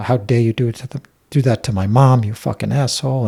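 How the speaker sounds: mock furious, heated angry voice. Recounting a fight with a man over his mom, retelling an angry yell. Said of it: "we just yelled at each other".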